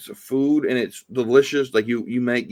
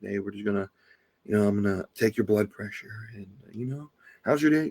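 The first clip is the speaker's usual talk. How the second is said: calm, soft, low clinical bedside voice; 3 semitones lower, 7 dB quieter than usual. Describing how doctors talk during a checkup, in a doctor's low office voice. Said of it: "they talk in that low office voice".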